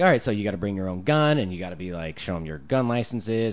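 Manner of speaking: ordinary talk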